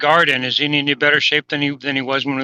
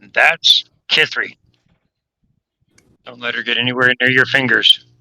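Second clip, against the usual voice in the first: hushed, whispered aside; 3 dB louder than usual. In a role-playing game, warning another character about a companion, whispering. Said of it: "I whisper over to Fit".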